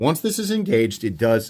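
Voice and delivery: voice breaking and cracking mid-sentence. Explaining how a knife's second lock pin works: voice cracking. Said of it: "my voice cracked".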